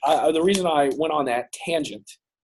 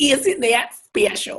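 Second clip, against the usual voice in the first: put-on prim, prissy matronly voice; 10 semitones higher than usual. Answering another speaker who asks for the church lady: Church Lady voice. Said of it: "Are you Dana, Dana Carvey right now?".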